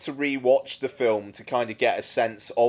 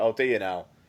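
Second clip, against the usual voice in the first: mimicked polite, dismissive tone, pitched lower; 4 semitones lower, 3 dB quieter than usual. Quoting a film character's reply about apple pie at dinner: imitating a polite brush-off. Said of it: "but in, like, the nicest way possible".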